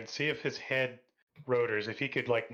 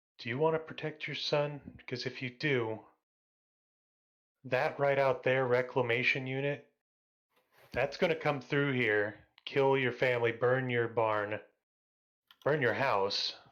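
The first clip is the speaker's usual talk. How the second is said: hushed whisper. Player character whispering to a robot by the side of its head. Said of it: "I start whispering to the robot".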